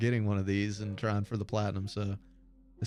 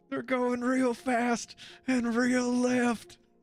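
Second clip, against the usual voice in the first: put-on very high, slow, hammered drunk voice. Retelling a video of a drunk tailgater at a NASCAR race: imitating a drunk man. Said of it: "hammered drunk".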